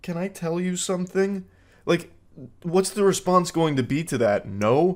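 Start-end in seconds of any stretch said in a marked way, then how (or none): 0.0-1.4 put-on timid, soft, shy, girlish anime voice. Urging someone to say it with their whole chest, mock shy anime girl voice. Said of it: "acting like some kind of shy anime girl? Oh".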